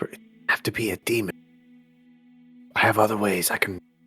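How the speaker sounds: put-on hushed stage half-whisper. Playing a character who half-whispers to the group about a demon: half-whispering in character. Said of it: "I just whisper".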